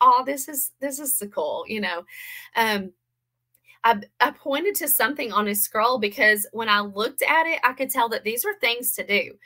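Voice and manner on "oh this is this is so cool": bright, sincere, joyous and delighted. Retelling how he reacted without mocking, imitating a joyous tone. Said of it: "It was this joyous".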